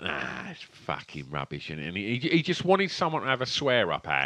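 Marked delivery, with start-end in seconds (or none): 0.0-1.7 put-on very low, soft, grumbling old-man mutter. Retelling what an uncle would say when you went in, imitating Maggots, sweary old man. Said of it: "proper like sweary old man".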